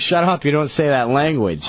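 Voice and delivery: normal talking voice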